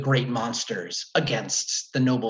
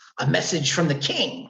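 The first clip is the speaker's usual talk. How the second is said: squeaky, high, gravelly growling monkey voice; 5 semitones higher, 3 dB louder than usual. The narrator voices a foot-tall monkey messenger in a high-pitched gravelly growling voice. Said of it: "he says in a high-pitched but somehow gravelly and growling voice".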